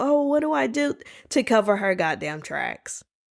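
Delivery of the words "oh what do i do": mock fake panic, higher pitched. Retelling how she called the sister: imitating someone acting distressed. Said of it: "acted like".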